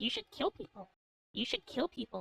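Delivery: whispering witch voice. Describing how stressed girls turn into witches, voicing the inner witch: inner witch whisper. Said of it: "the voice of your inner witch whispers to you".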